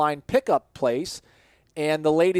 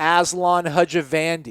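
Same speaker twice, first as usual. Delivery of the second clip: ordinary talk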